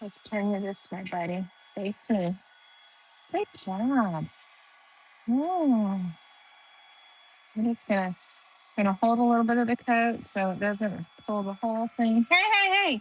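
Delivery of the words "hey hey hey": very high, sudden, repeated shout. Yelling at a loose puppy tearing up tape: yelling. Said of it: "I didn't mean to yell in your ear".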